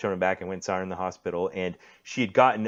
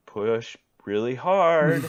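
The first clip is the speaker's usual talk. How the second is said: tense, raised voice through gritted teeth; 5 semitones higher, 5 dB louder than usual. Father recounting nurses urging his wife, imitating them speaking through gritted teeth. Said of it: "kind of through gritted teeth".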